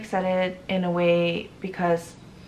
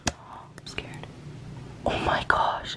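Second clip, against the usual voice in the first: frightened whisper, much quieter. In a clip from the day of finding out about the pregnancy, scared whisper.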